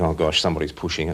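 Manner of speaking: normal talking voice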